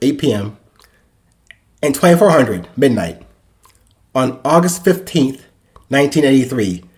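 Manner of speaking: plain reading voice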